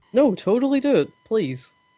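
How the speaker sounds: heavy sarcasm, high and swooping. Urging another player to steal a wallet: sarcastic. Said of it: "I detect lots of sarcasm there".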